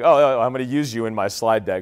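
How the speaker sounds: ordinary talk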